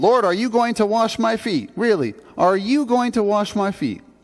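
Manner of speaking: appalled, incredulous tone. Acting out Peter's words to Jesus about the foot washing: appalled, as Peter. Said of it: "the inflection in Peter's voice".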